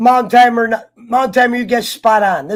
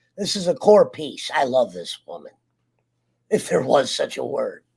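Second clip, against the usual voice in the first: very low, hushed, croaky frog voice; 10 semitones lower, 7 dB quieter than usual. A panelist discussing Walking Dead characters, speaking in a frog voice. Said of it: "Sorry about the frog voice".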